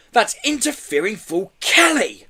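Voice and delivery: slow, high, sibilant villain voice hiss. Narrator reads the boss's line as he stares past his henchman: hissed. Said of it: "hissed Lockjaw".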